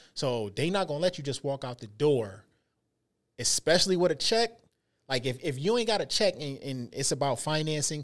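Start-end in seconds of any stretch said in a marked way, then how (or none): none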